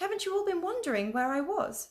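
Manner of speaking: astonished, amazed, pitched very high. Narrator reads Lucy's reply to Susan, amazed. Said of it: "said Lucy in amazement".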